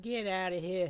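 stock-style put-on New York accent. Speaker shooing away a zombie that just turned up, in a New Yorker accent. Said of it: "That's my New Yorker accent".

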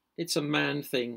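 said with pride. A sister answers her brother as the family gathers, with pride. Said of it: "his sister said with pride".

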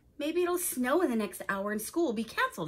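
plain

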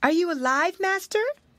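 very high, worried, anxious call. Waska climbs to the prisoner's barred window and calls in to his master, anxious call. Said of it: "called in an anxious".

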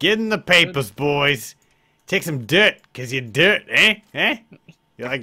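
put-on tough wiseguy voice, laid-on Canadian mobster accent. Playing a character addressing the boys, in a canadian mobster accent. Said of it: "What accent is that?".

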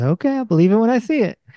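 high, quick, skeptical tone.

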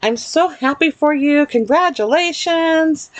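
high, joyful voice.

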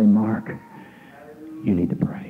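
small, hushed, quiet little inner voice. Quoting God calling out to pray: imitating a small voice. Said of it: "slip down in a small voice and say".

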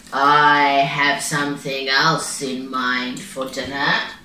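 deep, slow, unhurried big-cat voice. Narrator reading a voice answering instead of Bow Bow's mother, deep tiger voice. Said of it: "a deep voice heard".

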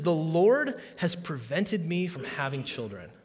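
ordinary delivery

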